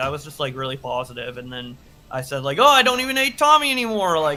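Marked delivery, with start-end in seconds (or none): 2.6-4.2 exaggerated, over-the-top, very high, very loud, shrill gush. Retelling one's own past words after going on meds: imitating own exaggerated delivery. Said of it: "in an exaggerative way".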